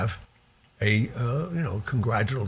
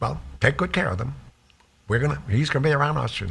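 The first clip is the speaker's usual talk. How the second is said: put-on old mobster voice, higher pitched; 5 semitones higher than usual. Retelling what the old man said on the phone: imitating the old man. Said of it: "that is a great impression".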